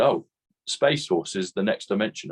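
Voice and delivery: plain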